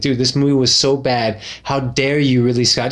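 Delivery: normal talking voice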